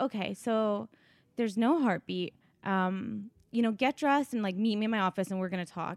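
normal talking voice

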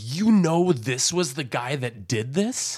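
angry and sarcastic. Retelling a show character's retort to another character: imitating a sarcastic angry retort. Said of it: "Very sarcastic".

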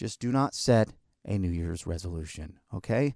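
gentle, calm, soothing voice, low and soft. Show host advises a listener against a resolution, in a calm and soothing voice. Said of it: "In my calm and soothing voice".

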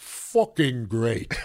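put-on London cockney accent. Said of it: "in the great [name] cockney accent".

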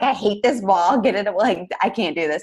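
panicked, frantic, frustrated freaking-out rant. Retelling own past self in pain before going to hospital: retelling freaking out. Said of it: "And I was like freaking out".

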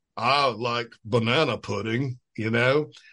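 put-on deep South Mississippi Southern accent. Retelling how a kid from Mississippi talked, imitating his Mississippi accent. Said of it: "the kid was from Mississippi. And so he talked like this".

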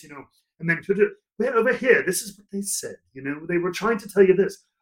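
put-on Irish brogue, lightly done. Recalling talking to someone onstage at a first show, demonstrating an Irish brogue. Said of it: "in an Irish brogue, a little bit like this".

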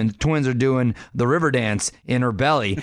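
ordinary talk

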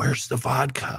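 soft, hushed whisper, said as a quiet aside. Retelling what she whispered across the table: imitating someone whispering. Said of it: "she whispers to another one".

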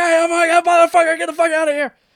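acted, very high, loud shrieking scream. Describing how his dog barks at the mailman, voicing the dog screaming. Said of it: "screams at him".

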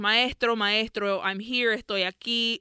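ordinary talk, nothing marked

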